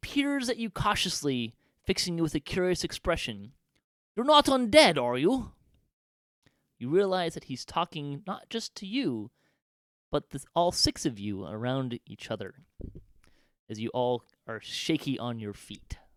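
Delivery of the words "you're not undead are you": small chirping voice, very high and raised. A narrator voices a halfling appearing from the shadows to the party: small chirpy voice. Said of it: "chirps a small voice".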